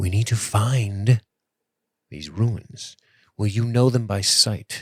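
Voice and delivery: hushed, quiet confiding voice, "find" drawn out. Voicing Adric during a roleplay game, the player speaks in a lowered voice. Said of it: "Adric starts to lower his voice".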